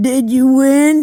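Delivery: put-on boozy, sozzled drunk man's voice, high and loud. Retelling a movie scene where he stumbles onstage: imitating a drunk man. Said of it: "and he's all drunk".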